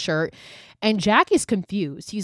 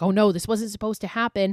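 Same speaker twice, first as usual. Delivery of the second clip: imitated panicked manner of speaking. Retelling a scene where a character starts to panic: imitating panic. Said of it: "And Carmichael starts to panic".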